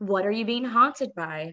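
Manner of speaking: unbothered, unfazed, offhand, matter-of-fact delivery. Retelling a man answering a caller who says he's haunted, imitating a monotone voice. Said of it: "his voice is so like monotone and unfazed".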